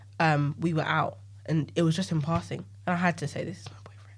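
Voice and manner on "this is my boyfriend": very quiet, hushed, barely voiced near whisper. Retelling introducing her boyfriend to a friend: imitating an almost-whisper. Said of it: "I almost whispered it".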